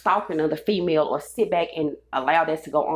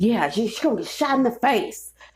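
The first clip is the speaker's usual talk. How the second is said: put-on angry, disgruntled, pitched-up old man voice; 6 semitones higher than usual. Retelling a threat from an older man: imitating an angry old man. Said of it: "sound like an angry-ass old person".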